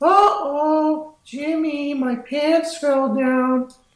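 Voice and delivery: very high, slow cartoon voice. Imitating a Jimmy Neutron character that a friend voices: Jimmy Neutron character voice. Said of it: "he talks like this".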